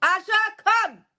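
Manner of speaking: loud, high-pitched calling yell. Calling the dog up from downstairs, yelling. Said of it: "I'm gonna yell".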